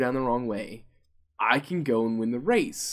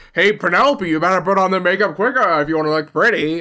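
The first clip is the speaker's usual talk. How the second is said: very loud, high, goading narrator voice; 6 semitones higher, 9 dB louder than usual. Mocking how the race narrator eggs on the racers: imitating the race narrator. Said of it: "He's just like".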